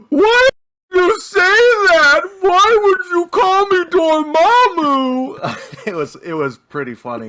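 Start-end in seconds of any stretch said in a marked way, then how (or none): 0.1-5.8 mock very high, slow, loud sobbing wail. Retelling her reaction after he jokingly called her Dormammu, imitating someone crying. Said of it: "she just loses it and starts crying".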